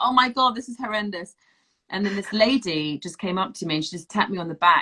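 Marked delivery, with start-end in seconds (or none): 0.0-1.3 high-pitched, mortified, panicked and overwhelmed voice. Retelling a child screaming in the pram in public, acting out embarrassment. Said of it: "you're so embarrassed to go in public".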